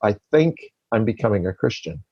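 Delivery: play-acted words forced out with difficulty, choked. Retelling what a man finally told someone, imitating choked-out words. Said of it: "took him a little over a minute to finally choke out the words".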